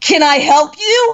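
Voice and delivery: mock strong, no-nonsense, firm and loud tone. Retelling facing a man while at a credit card machine, retelling a firm, strong challenge. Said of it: "Just really firm and strong".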